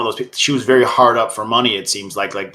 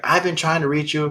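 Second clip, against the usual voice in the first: put-on scream, higher; 5 semitones higher, 4 dB quieter than usual. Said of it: "and then it's just screaming".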